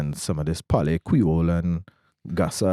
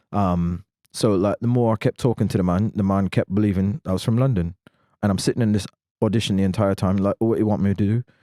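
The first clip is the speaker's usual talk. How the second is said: plain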